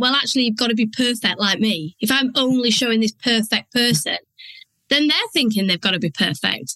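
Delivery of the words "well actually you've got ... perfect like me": ordinary talk, nothing marked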